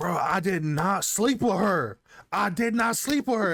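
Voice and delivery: put-on high scream, rising pitch. Retelling a dude chasing a girl through the hallway: imitating someone screaming. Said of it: "he's screaming in the hallway".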